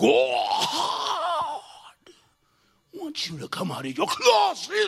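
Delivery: very slow, loud, drawn-out demon voice. Speaker retelling what people say to his bride, in a demon voice. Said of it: "they got a demon voice".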